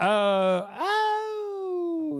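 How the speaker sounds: voice cracking, breaking up into a high pitch. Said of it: "Losing my voice a little bit".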